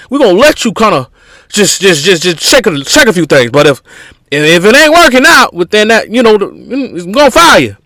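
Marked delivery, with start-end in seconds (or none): 6.4-7.6 bad put-on Southern accent, pitched up. Describing a work mentality, spoken in a bad Southern accent.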